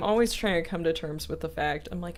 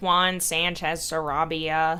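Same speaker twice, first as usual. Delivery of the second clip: exaggerated, very American accent; 3 dB louder than usual. Streamer shows how an american would say a viewer's name, very american pronunciation. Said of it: "the very American way of saying it would be like".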